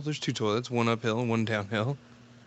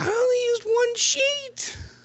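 put-on very high, slow, small child's voice; 3 dB louder than usual. Retelling a dad's outburst, giving the kid's answer in a high-pitched kid voice. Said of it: "the level of pitch in the kid's voice".

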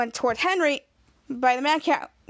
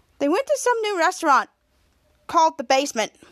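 usual speaking voice

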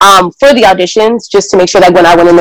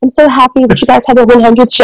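put-on British accent, pitched higher; 5 semitones higher than usual. Retelling a video message she received, imitating Cynthia's British accent. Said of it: "with her British accent".

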